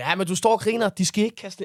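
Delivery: loud, angry tone. Retelling what an annoyed van driver said back: imitating someone angry. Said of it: "og han var pissesur".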